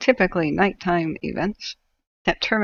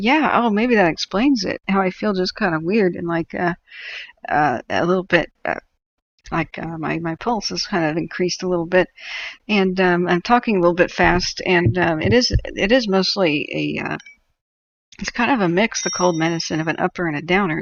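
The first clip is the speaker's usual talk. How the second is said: ordinary talk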